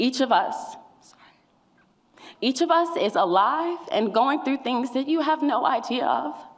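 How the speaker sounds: tearful, crying speech with words breaking through. Addressing the community, crying while speaking.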